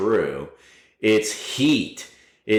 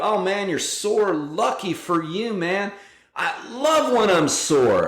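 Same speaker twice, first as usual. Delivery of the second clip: dry, higher-pitched, sarcastic fake cheer; 10 semitones higher than usual. Retelling a remark to people who complain of soreness: imitating own sarcastic remark. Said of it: "maybe a little bit of sarcasm".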